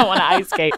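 acted-out panicked voice. Retelling learning a planned ice skating scene: imitating own past panic. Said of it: "panicking 'cause I'm, like".

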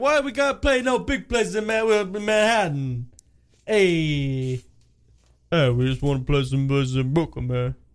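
slow delivery, "hey" drawn out and stressed. Joking about a band playing little Brooklyn clubs: Sylvester Stallone impression. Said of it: "Sly Stallone".

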